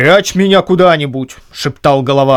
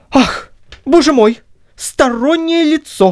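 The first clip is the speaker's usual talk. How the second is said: very high-pitched, frightened crying out; 11 semitones higher than usual. Narrator reading the deacon's line as a knock comes at the door, frightened shout. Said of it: "закричал в испуге дьяк".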